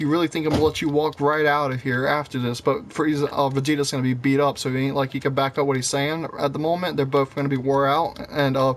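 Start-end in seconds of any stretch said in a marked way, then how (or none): none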